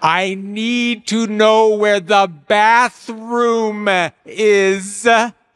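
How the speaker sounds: loud, slow, exaggerated articulation.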